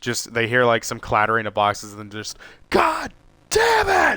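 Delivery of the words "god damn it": acted, furious, shrill, very high, loud yell. Retelling dropping boxes in a store: retelling an angry yell. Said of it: "pure fucking anger".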